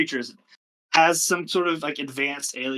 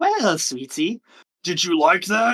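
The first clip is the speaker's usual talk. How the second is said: shifting, many-voiced creature voice, pitched up; 5 semitones higher, 4 dB louder than usual. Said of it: "it just keeps switching voices".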